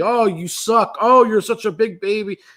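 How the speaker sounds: mock taunting jeer, slow and drawn out. Retelling heckling a player at a game: imitating own heckling yell. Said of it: "I'm yelling at him".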